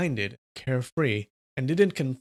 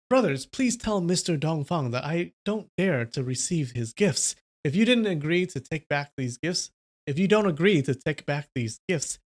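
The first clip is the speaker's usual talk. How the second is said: plain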